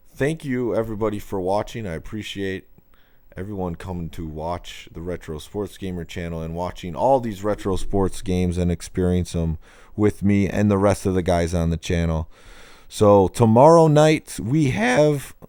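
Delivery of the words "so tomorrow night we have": high, slow voice breaking mid-phrase. Announcing the plan for tomorrow night's stream, voice cracking. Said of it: "my voice is cracking".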